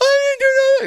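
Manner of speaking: very high-pitched, loud, tearful sobbing blurt. Retelling a woman who starts crying after being told she was rude: imitating someone crying. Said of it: "starts crying like".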